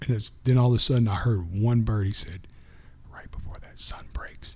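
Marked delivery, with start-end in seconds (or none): 3.1-4.6 crazy, intense, hushed, barely voiced whisper. Retelling what a friend whispered before sunrise: imitating a whisper. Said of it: "He was whispering though".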